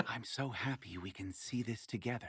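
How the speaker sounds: soft, hushed half-whisper. At a lake in a role-played story, a character speaks to a companion, half-whispering. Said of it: "she whispers".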